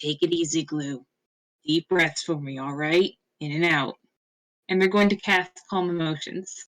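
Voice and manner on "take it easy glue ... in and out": low, grumbly, rumbling character voice. A character calms a companion before casting Calm Emotions, low grumbly voice. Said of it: "say in that sort of low grumbly voice".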